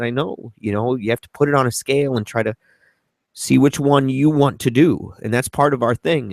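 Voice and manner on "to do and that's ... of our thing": ordinary talk, nothing marked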